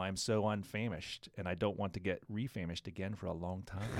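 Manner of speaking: ordinary delivery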